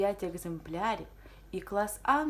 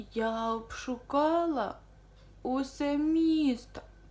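very slow drawn-out moan; 5 semitones higher, 3 dB louder than usual. Barely breathing after searching every bookstore, a customer tells the bookseller, groaning. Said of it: "простогнала вона".

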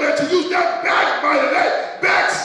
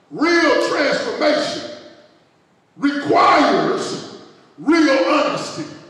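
slow, deliberate, emphasized delivery; 2 semitones lower than usual. Telling listeners to write this down, saying it slowly. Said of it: "I'm going to say it slow".

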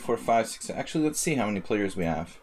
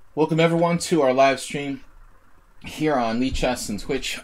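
raised voice, nearly gone, half-lost; 4 semitones higher, 5 dB louder than usual. Welcoming everyone to the live stream: voice nearly lost. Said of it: "I lost my voice for some reason".

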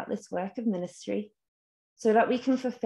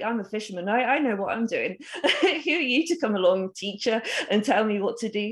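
derisive, dismissive, sarcastic and scornful. Imagining Simon's reply to Jesus about catching fish: imitating Simon's sarcasm. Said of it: "this sarcasm, this kind of derision".

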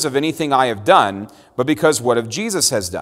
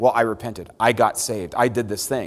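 usual speaking voice

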